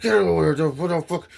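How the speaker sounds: angry cursing, scolding tone. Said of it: "She's cursing him the fuck out".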